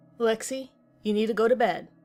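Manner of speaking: firm, stern, fatherly tone. The narrator finds Lexi awake in the dark and tells her to bed: stern, fatherly voice. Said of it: "in a stern, fatherly voice".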